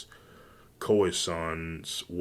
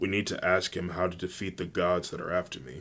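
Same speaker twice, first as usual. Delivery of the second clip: plain reading voice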